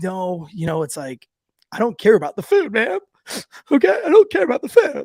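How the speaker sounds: put-on tearful, overwrought crying voice with swooping pitch. Retelling refusing food after quitting selection: retelling his own crying plea. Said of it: "really emotional and crying".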